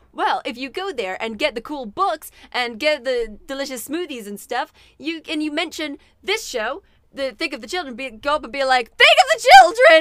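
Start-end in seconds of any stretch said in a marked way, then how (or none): 9.0-10.0 very loud, high, alarmed, alarming yell. Showing listeners how to shout the show's name: very alarming way. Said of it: "do it in a very alarming way".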